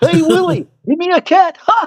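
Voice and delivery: very high-pitched alien puppet voice. Recalling the first voices they learned, the speaker launches into an ALF impression. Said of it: "one of the first voices I learned to do".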